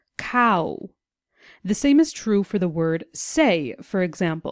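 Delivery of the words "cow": cow drawn out slowly. Showing how a vowel slides into another: saying cow slowly. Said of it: "when saying the word cow slowly".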